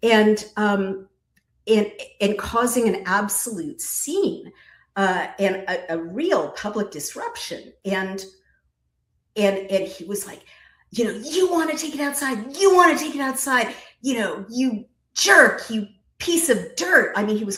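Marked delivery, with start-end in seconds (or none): 11.1-17.1 high-pitched, goading, provoking shout. Retelling a courtroom scene where a man shouted insults, imitating a man shouting insults. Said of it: "calling him all kinds of names at the top of his lungs".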